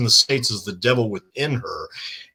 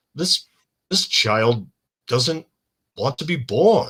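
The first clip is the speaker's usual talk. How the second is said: dead straight, flat, no audible reaction. Describing a film's opening, quoting the doctor's line as Donald Pleasence says it: deadpan. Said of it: "just says all deadpan".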